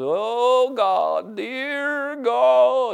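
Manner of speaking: put-on whine, very high and very slow. Speaker acts out how a man prayed to god, mock whining voice. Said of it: "put on that whining voice".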